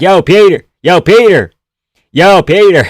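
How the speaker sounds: loud, exaggerated, over-the-top super-American voice. Mocking how the name gets said: imitating a super American. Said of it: "like a super American".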